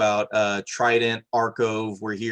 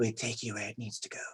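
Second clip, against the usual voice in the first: very hushed, very quiet, breathy fishlike creature voice; 14 dB quieter than usual. Redoing a creature's line after calling the first try wrong, breathy fish-like voice. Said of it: "a little more breathy".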